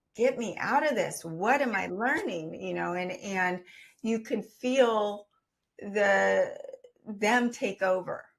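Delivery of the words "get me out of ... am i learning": crying, tearful voice, spoken through tears. Retelling words said while in tears in the bathroom: retelling crying. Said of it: "in tears, just crying".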